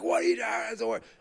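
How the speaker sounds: put-on whispered yell. Retelling a parent on the sideline yelling at the referee: imitating a screaming parent. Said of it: "screaming at me".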